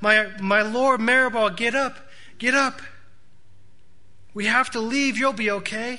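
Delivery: high, loud cry full of horror. Running to a boy who fell and screams in pain, a woman speaks, crying out. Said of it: "she cries out".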